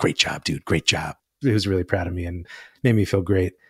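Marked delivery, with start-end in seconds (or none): 0.0-1.2 put-on under-the-breath mutter, lower. Retelling a travel instructor's quiet praise: imitating Charles muttering under his breath. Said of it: "under his breath".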